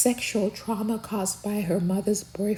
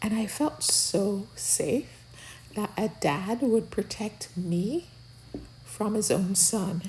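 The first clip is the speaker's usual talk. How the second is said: plain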